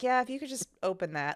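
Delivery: very laid-back, unbothered, casual tone. Retelling a movie scene where Dallas reports the problem: imitating Dallas, very chill. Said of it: "he was so chill about it".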